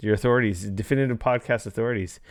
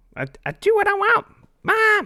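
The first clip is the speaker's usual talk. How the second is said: put-on cartoon kid voice, much higher; 4 dB louder than usual. Between rundowns of the show's sections, speaker attempts a Cartman impression. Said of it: "I can't really do a good Cartman".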